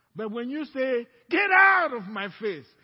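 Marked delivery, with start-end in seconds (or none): 1.3-2.7 mock forceful, stern tone, louder. Acting out a believer rebuking Satan: imitating a strong rebuke. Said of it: "that was strong".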